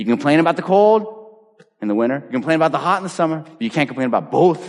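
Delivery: put-on Boston accent. Quoting a man who came back from San Diego, in a South Shore accent. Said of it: "In his great South Shore accent".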